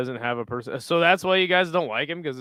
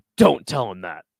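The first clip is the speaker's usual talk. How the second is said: mock dead serious tone, louder; 3 semitones lower, 4 dB louder than usual. Retelling a mother cutting in on a sister: imitating mom, dead serious. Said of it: "she was, like, dead serious".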